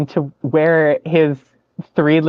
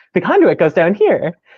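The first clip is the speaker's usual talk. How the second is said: very chipper, bright, cheerful tone; 3 semitones higher than usual. Retelling someone popping out of the floor to speak, imitating a chipper voice. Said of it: "Just a very chipper".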